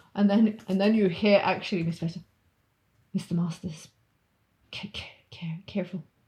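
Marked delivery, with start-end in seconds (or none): 3.2-6.1 hushed whisper, word repeated. Retelling a scene, voicing what Miss Vesta says, whispering. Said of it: "she whispers".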